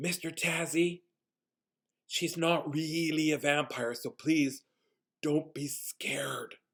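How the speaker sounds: whispered remark, hushed voice. Quoting what someone whispered in the speaker's ear: retelling a whispered remark. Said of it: "he whispers in my ear like this".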